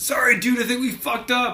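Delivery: very high pitch, loud, blurted out. Quoting a favorite Trailer Park Boys line as Corey: impression of Corey from Trailer Park Boys. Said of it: "it's mainly Corey, like".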